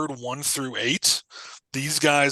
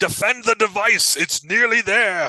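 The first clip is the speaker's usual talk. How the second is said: big, loud, booming giant monster-crab voice; 8 semitones higher, 5 dB louder than usual. Narrating to the players, voice the giant crab calling out: big booming crab voice. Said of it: "You hear a big voice boom".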